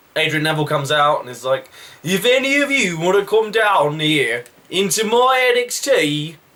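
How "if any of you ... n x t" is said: attempted Geordie accent. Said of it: "I can't do a Geordie accent all the time".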